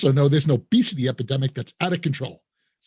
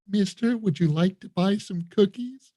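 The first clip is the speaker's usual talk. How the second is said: sweet, cherubic angelic choir in perfect unison; 3 semitones higher, 3 dB quieter than usual. Retelling what Girl Scouts at an exit table said, imitating an angelic choir. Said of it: "like it's some angelic choir".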